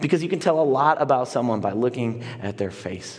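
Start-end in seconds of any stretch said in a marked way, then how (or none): none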